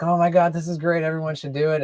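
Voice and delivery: put-on shouting. Retelling how people who figured out the protocol react: imitating people shouting.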